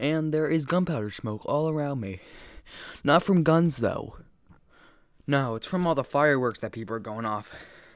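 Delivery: winded, high, catching breath between words. Just back from taking the trash out, the speaker tells listeners, out of breath. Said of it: "I'm out of breath because I just went outside".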